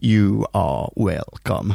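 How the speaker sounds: low-pitched put-on lizard alien voice. After summarizing a story about lizard people beneath scientists, Silurian voice. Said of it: "was that our joint effort to do a Silurian voice".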